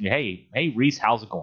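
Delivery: ordinary talk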